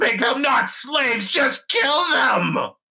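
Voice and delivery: strained, very high, pained cry. As his clothes burn, a character calls out, high-pitched voice pushing through pain. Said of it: "he calls out now in this high pitched voice".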